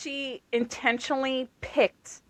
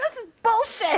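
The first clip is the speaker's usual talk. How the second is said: imitated screaming, higher; 11 semitones higher, 4 dB louder than usual. Retelling reacting to a book scene, imitating own screaming. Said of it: "I'm, like, screaming at the book".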